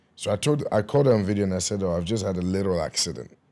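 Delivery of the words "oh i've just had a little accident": normal talking voice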